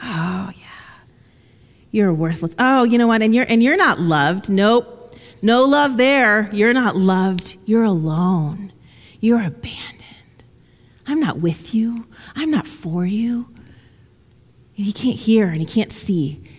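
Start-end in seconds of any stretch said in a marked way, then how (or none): 0.0-13.5 much slower put-on mock whisper. Speaker acts out the enemy speaking to a lonely man, imitating a whisper. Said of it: "the enemy just keeps whispering".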